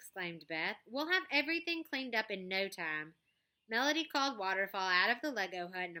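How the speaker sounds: plain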